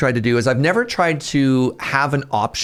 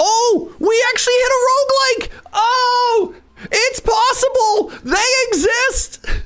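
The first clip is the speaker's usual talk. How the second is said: overjoyed, very high shouting, long drawn-out oh. As the vote lands on a roguelike, excited shouting. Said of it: "I'm sorry for shouting".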